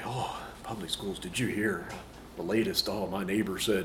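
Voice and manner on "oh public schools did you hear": ordinary delivery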